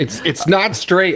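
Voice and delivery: yelling, pitched high. In a role-play scene, the character calls to her through the window, yelling. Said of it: "I'm like yelling at her through the window".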